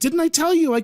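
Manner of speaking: very high-pitched, shrill yell. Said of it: "she shouts at him".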